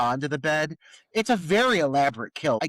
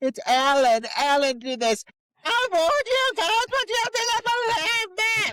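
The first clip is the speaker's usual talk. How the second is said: maniacal, very high, climbing shriek. Retelling how Karen delivered her line about Alan: imitating a maniacal shriek. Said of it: "She's just shrieking".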